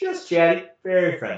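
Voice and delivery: high, swooping, animated comic delivery. Retelling a funny line from the show: Jerry Seinfeld impression. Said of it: "in a very Jerry Seinfeld way".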